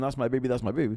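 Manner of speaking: ordinary delivery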